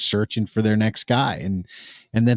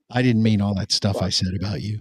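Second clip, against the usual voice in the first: put-on whisper. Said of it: "He's whispering".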